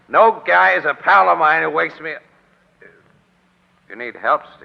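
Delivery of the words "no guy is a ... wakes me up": angry, loud, rough, slow yelling. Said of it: "excuse me for yelling at you".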